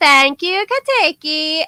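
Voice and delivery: put-on Thai English accent. Speaker quotes a character thanking her butler, in a weird Tinglish accent. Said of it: "she speaks in this weird Tinglish".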